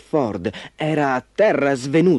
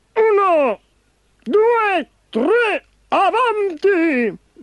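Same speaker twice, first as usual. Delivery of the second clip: very high, very slow, drawn-out shout. Narrator reads Razzo calling to the little cars carrying Ford, shouted. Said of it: "gridò Razzo".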